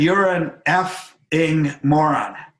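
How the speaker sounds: acted, slow, deliberate, blunt insulting tone, each word weighed. Retelling what a hero said at lunch: imitating someone saying it loudly. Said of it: "he said it really loudly in a really quiet restaurant".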